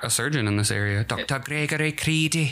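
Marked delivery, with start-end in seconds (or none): 1.0-2.5 put-on Scottish-British accent, pitched up. Saying a local surgeon's name for fun, the speaker uses a Scottish-British accent. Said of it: "He's just got a fun name to say with the accent".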